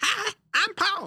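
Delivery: very high, chattering monkey voice. Asked to let the others hear it, doing the monkey at the end: imitating the monkey at the end. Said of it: "I can do the monkey at the end".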